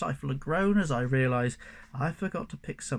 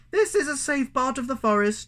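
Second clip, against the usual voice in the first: muffled speech, higher and louder; 11 semitones higher, 5 dB louder than usual. Reading a story where a mouse speaks from inside a pocket: muffled voice. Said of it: "Mousetrap says in a muffled voice".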